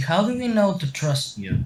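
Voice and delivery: wary, doubting, slightly suspicious tone. Speaking in character to a stranger who offers his hand: suspicious. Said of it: "looks at him a little suspiciously".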